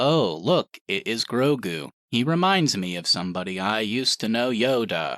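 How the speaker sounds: slow, hollow, lifeless robotic monotone. Retelling a scene for other speakers: imitating Luke Skywalker's de-aged voice. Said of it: "beautifully hollow, emotionless robot voice".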